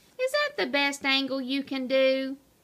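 ordinary delivery

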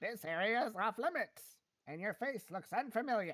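sinister cartoon villain voice, evil overlord style. Trying out a character voice in a session with others: voice like Skeletor. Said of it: "That sounds like Skeletor again".

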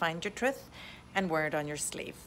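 ordinary talk

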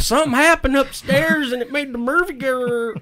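put-on thickest full Arkansas accent, very high pitch. Retelling what someone said after a bathroom incident: thick Arkansas accent imitating Kristen. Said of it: "she just went into the thickest full Arkansas accent".

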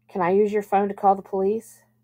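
plain reading voice

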